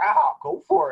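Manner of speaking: put-on high, loud, slow, creaky, drawn-out voice.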